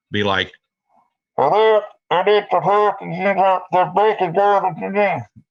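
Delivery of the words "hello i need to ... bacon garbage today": very high, muffled, distorted, close-mic voice. Showing how speech sounds with the mouth too close to the mic: distorted. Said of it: "You'll distort your sound".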